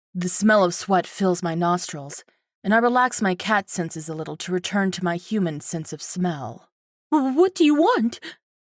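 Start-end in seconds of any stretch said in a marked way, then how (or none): 7.1-8.2 trembling, quavering, high-pitched shaky voice. A woman pushed into a chair asks the narrator, in a high-pitched shaky voice. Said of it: "she asks with a high-pitched, shaky voice".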